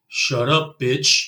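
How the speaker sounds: bone-dry, flat, expressionless deadpan delivery. Retelling a man's retort to a woman who mouthed off, retelling a deadpan line. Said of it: "in total deadpan".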